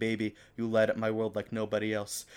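normal talking voice

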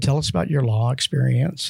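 ordinary talk, nothing marked

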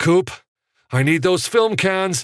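very high, shrill shout. Reading Evan calling to Coop as a crowd gathers at Grauman's, shouting. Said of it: "Evan shouted".

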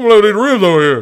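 put-on deep celebrity voice. Joking about Bigfoot eating carcasses in the woods: Shaq voice. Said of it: "That was my Shaq".

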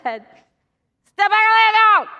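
put-on very thick Cajun accent, very loud and fast. Retelling what a fishing guide said to them, in a thick cajun accent. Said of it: "in his very thick Cajun accent".

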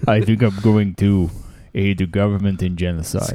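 very low, deep put-on voice. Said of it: "that's your Henry Kissinger voice".

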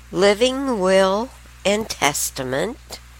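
slow word-by-word dictation. Listing legal forms so listeners can write them down, said slowly. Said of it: "I'll say it slow".

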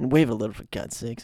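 put-on muttering under breath. Retelling Zapp Brannigan ordering Kif: Zapp Brannigan muttering under his breath. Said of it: "under his breath".

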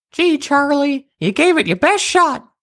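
very high, tiny, small little voice. Narrator voices an unseen speaker addressing Charles at the machine; tiny voice. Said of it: "a tiny voice said".

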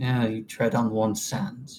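mumbled under the breath. A character replies before laying his head down, mumbling under his breath. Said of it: "Kind of mumbling under his breath".

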